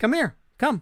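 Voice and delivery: high, friendly, inviting coaxing tone. Retelling calling the dogs in Spanish to come, retelling a friendly call. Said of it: "like just friendly".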